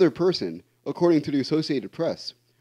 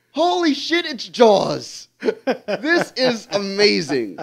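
mock stunned cry, high, very slow, every word stretched; 5 semitones higher than usual. Retelling reading the news in bed in the morning: retelling a shout. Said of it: "and I shouted".

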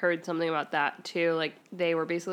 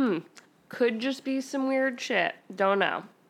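put-on sarcastic tone, pitched up, faking uncertainty; 5 semitones higher than usual. Answering the other speaker with a joke, sarcastic. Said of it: "I'm totally being sarcastic".

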